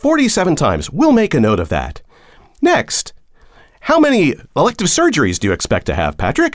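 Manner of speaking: high, swooping automated-assistant voice. Acting out an employer's automated healthcare tool asking questions: automated healthcare assistant voice. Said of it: "some of these kind of automated systems".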